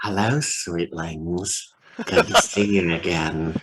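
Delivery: low, creepy villain voice. Recalling a game character the players met a second time, doing Gaunt's distinctive voice. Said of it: "a very distinctive voice that players learned to hate".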